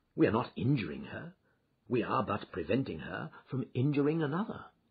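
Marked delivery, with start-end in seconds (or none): none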